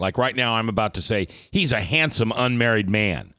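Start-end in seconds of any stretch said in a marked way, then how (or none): 1.5-3.2 heavy, dry, ironic, sarcastic tone. Teasing a co-host the listeners were told he kids: sarcastic tone. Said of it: "I'm very sarcastic on that".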